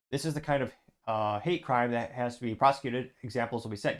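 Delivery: ordinary delivery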